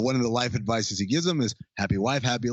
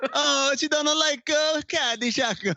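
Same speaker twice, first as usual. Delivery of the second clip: mock-whiny voice, much higher pitch. Imitating a friend's complaints the way friends mock whining, in a mock-whiny voice. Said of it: "the whiny voice that we all adopt".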